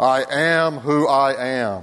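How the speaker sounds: slow, booming, very deep put-on voice. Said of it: "God uses his booming James Earl Jones voice".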